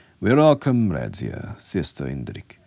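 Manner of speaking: usual speaking voice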